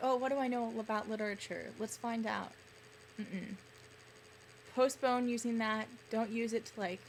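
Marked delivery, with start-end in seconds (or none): none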